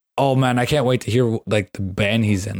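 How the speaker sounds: ordinary talk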